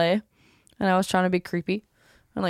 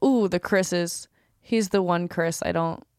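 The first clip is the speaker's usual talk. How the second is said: plain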